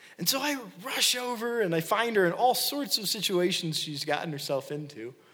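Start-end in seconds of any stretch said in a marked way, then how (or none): none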